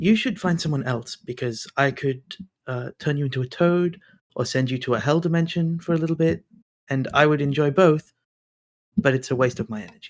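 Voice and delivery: very quiet murmur under the breath. A player voices her character speaking to a pickpocket, very quietly under her breath. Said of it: "says very quietly under her voice".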